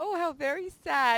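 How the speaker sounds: put-on chipper, sunny, upbeat tone. Recalling a scene from a show, the speaker imitates the mom's cheerful voice. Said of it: "and such a cheerful voice".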